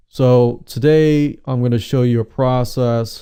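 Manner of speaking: flat, unvaried voice. A speaker on engagement imitates a dull webinar presenter, in a monotone voice. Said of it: "just talks in a monotone voice? It's like".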